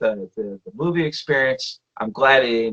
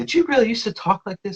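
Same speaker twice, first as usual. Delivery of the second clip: very high, mocking, teasing voice; 10 semitones higher than usual. Retelling how a character's wife teases the husband's old dialect: imitating someone mocking. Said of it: "making fun of".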